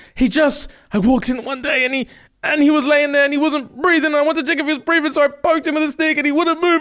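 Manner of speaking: put-on frantic, high, hysterical babbling. Retelling a woman's answer to a judge, imitating her going into hysterics. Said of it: "she goes into hysterics".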